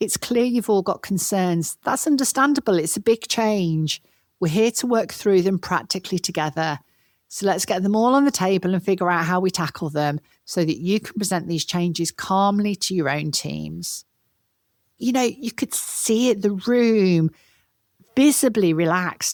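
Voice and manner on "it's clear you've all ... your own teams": plain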